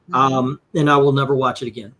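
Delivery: ordinary talk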